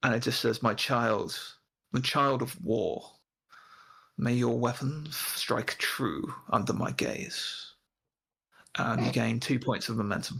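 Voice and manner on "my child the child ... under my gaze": slow, warm, drawn-out voice of a god. Voicing a god speaking to a player character: warm voice of the Bannerlord. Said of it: "a voice that fills you with warmth".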